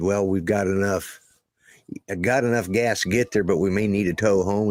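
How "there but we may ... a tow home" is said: normal talking voice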